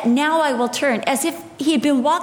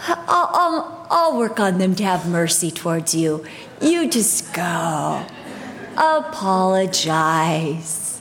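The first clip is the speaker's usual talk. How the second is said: put-on sweet tone, lower pitch; 9 semitones lower than usual. You are a preacher describing a gentle inner voice of conviction, acting it out, imitating a sweet voice. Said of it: "It's that sweet, like".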